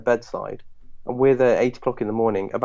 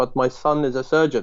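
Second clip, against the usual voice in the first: put-on Iraqi accent with broken English. Retelling his dad's reaction to him going into GP, in Iraqi broken English accent. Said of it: "like in his like Iraqi broken English accent".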